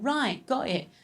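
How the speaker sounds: put-on British accent with a ready, eager, agreeable tone. Retelling a british dad agreeing to inhale hard: british accent. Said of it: "He's also British".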